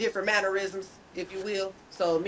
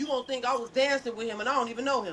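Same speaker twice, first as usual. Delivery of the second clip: plain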